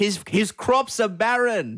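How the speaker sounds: high, slow, put-on peasant voice, heckling. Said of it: "I was heckling them like a peasant".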